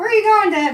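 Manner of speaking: put-on very high small-child voice. Recalling asking the dad where he was going as a small child, in a little kid voice. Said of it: "That's my little kid voice".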